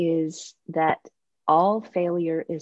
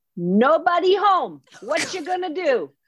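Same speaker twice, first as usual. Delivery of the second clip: put-on shrill old Italian man shouting, very high; 11 semitones higher, 4 dB louder than usual. Telling of a student play, imitating an Italian grandfather yelling from the audience. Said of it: "we hear an Italian grandfather yell out".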